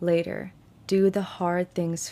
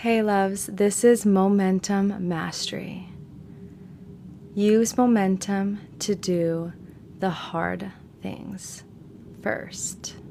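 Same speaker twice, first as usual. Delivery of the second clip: very slow, drawn-out, deliberate delivery. Opening the show's intro to listeners, very slow. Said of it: "Why did I say that so slow?".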